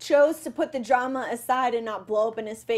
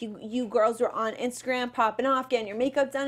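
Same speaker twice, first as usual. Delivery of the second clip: normal talking voice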